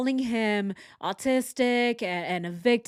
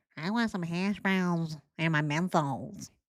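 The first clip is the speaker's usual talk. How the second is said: put-on dumb-guy voice, quieter; 4 semitones lower, 4 dB quieter than usual. Answering a mock last-meal question in the man's voice, dumb-guy Tanner impression. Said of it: "He just sounds like a really dumb guy".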